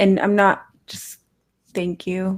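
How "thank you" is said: very soft, hushed, under the breath. Taking an object from another character and thanking them: said very quietly. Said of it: "very quietly".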